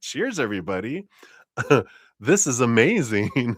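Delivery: mock tipsy, overly cheery voice. Acting out a mom riding a rabbit on a card: imitating an overly cheery mom. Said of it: "Mom's of good cheer".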